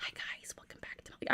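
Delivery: hushed soft whisper. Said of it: "whispering, like".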